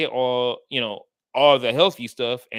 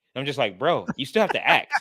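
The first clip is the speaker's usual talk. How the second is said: plain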